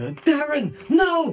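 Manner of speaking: screaming desperately. Game master voicing a woman's cry heard through a pendant, screaming desperately. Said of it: "the voice of a woman just screaming very desperately".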